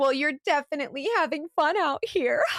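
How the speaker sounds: light flirty tone. Retelling own words to a man while flirting: retelling own flirty line. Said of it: "Just flirting".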